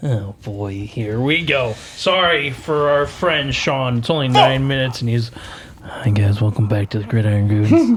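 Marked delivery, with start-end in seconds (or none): 5.8-8.0 low, quick ASMR-style voice. Opening the podcast episode, the host greets listeners in an ASMR voice. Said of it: "We're back into A S M R land".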